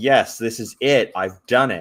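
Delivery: ordinary talk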